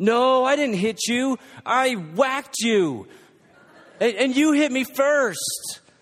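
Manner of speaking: put-on high, loud child's yell with laughter.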